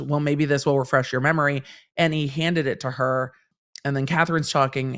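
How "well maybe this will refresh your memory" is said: ordinary talk, nothing marked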